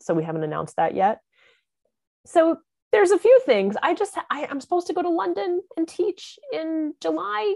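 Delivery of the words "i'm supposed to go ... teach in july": hesitant, much higher and slower. Speaker telling a listener about upcoming teaching trips abroad, hesitant. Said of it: "You can hear the hesitance in my voice".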